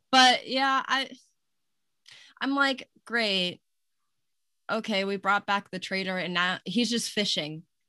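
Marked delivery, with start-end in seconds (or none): none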